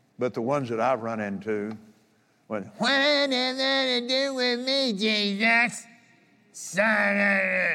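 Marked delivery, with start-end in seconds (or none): 2.8-7.8 very high, slow, drawn-out sickening demon voice. Speaker mimics what the spirits he has run into said, mimicking a nasty spirit's voice. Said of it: "you don't have that nasty spirit's voice behind it".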